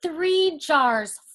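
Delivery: ordinary delivery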